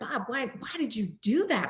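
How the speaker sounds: put-on angry, furious, reproachful tone. Retelling what was said to him after the meeting: retelling own furious complaint. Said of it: "I'm furious with him".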